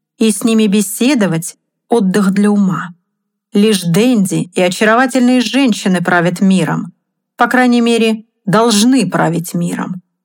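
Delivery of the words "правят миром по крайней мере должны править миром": ordinary delivery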